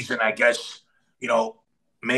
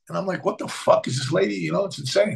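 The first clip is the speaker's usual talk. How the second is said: ordinary delivery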